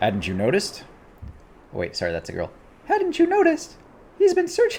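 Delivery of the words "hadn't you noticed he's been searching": very high, squeaky, cartoonish voice. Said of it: "Sounds like Mickey Mouse".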